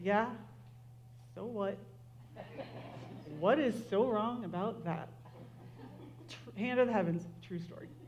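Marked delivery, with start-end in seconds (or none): 0.0-5.1 quieter, slower muttering under the breath. Retelling walking away after being called the older brother, muttering under breath. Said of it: "muttering under my breath".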